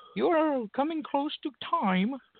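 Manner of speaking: squeaky, tiny, very high little British voice. Speaker notices the timer counting him down, in a little british voice. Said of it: "the little British voice in my head saying".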